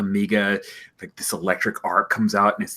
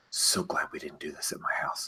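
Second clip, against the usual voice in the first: whispered mutter under the breath; 5 semitones lower, 11 dB quieter than usual. Just before she starts typing, [name] mutters to herself. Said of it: "she mutters to herself".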